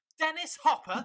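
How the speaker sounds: sudden shout, very high. Recalling seeing an actor's name come up in the titles, retelling own shout. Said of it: "I shouted".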